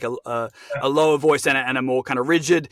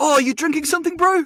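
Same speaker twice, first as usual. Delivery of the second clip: put-on New Zealand accent, higher; 4 dB louder than usual. Asked for a short Taika impression, doing Taika's voice. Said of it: "one little short Taika impression".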